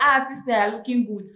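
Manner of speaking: ordinary talk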